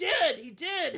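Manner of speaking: loud, drawn-out orc character voice. Narrating a game scene, the speaker voices the orc answering: orc voice. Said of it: "the orc is like".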